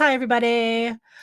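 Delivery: ordinary talk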